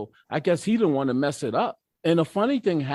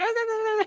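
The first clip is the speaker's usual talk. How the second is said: very high, squeaky, nervous, squeaked-out "ahs". Retelling reading a fifth step aloud in a diner: imitating own high-pitched anxious voice. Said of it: "My voice is so high pitched".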